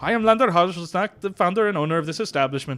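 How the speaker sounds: put-on Indian accent. Improvising as a chocolate shop founder, Lander Hajelsnack, Indian accent. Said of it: "Why'd I switch into Indian?".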